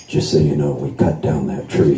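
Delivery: low, hushed, murmured voice.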